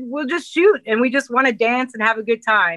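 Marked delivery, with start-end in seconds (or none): none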